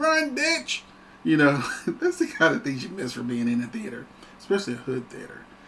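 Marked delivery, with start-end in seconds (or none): 0.0-0.8 high-pitched shrieking, screaming yell. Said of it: "somebody probably would scream".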